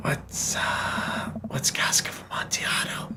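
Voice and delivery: hushed whisper. Recounting a question they whispered to someone, retelling a whisper. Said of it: "whispered to him".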